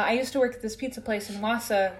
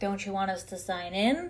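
earnest, proper, polite character voice; 3 dB quieter than usual. Retelling a movie scene, doing a Sam impression. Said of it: "It's a great Sam impression".

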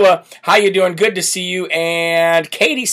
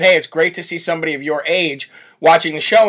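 plain

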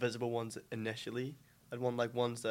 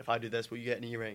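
ordinary delivery

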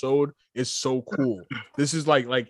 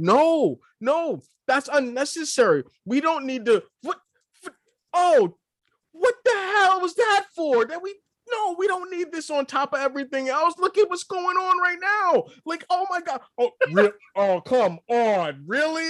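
mock frantic, disbelieving, outraged screaming, very high, swooping. Retelling reacting to a violent animated scene: imitating own screaming at the TV. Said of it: "I was literally screaming at the T V".

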